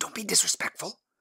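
breathy whisper under the breath. A husband answers his wife, who can't stand the frogs: whispered. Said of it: "her husband whispered".

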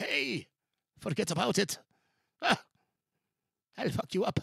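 put-on Irish accent. Retelling what a man said: imitated irish accent. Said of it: "that Irish accent".

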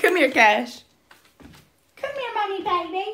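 very high, loud, coaxing sweet talk. Calling the dog Cash over to come here: sweet-talking a dog. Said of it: "Why you trying to sweet talk him?".

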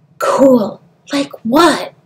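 nervous stage whisper. A woman asks her companion what she means, in a nervous half-whisper. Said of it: "her voice a nervous whisper".

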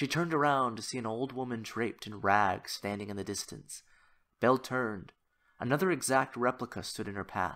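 plain reading voice

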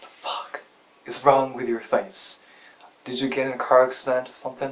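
plain

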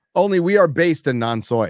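ordinary delivery

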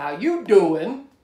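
loud gadget voice. Describing a talking mug, imitating the mug's voice. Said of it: "takes over the mug and says".

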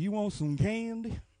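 soft, gentle, kindly grandfather voice. Describing a guy who offers a passing kid candy, acting a good grandfather. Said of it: "the guy that when he sees a kid come by".

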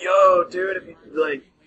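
high-pitched druggy stoner hippie voice. Describing a druggy hippie character for a joke, in a typical druggy voice. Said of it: "just the typical druggy character".

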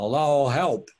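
sudden, loud, high-pitched yell. Retelling a friend's cry as his car slid on ice: imitating a friend yelling. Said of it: "he yelled out".

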